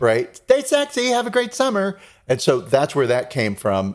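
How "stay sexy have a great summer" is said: very high-pitched voice. Retelling a sign-off joke, like a yearbook line: mock yearbook sign-off voice. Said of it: "what you would say in a high school yearbook".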